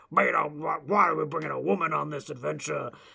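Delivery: gruff, put-on man's voice. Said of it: "He was like this gruff, tumble, like".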